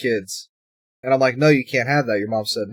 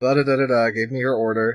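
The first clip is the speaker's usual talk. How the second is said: ordinary talk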